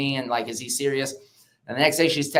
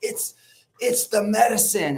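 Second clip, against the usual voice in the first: high-pitched, shouted-out hollering; 7 semitones higher than usual. Retelling what was yelled in the cold plunge: retelling own yelling. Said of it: "I just start yelling and I was like".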